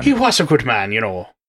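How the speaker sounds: put-on Irish accent, pitched very low. Talking about the Irish stout being drunk, speaker puts on an Irish accent. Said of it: "With my wonderful Irish accent".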